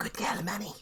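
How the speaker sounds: soft, breathy put-on whisper. Voicing Faye sending a magic message to Manny: whispering in character.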